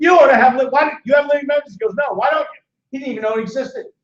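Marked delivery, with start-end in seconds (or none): 0.0-1.8 raised, pitched-up yelling. Retelling how he yelled at his cardiologist, retelling a yell. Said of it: "I'm yelling at him".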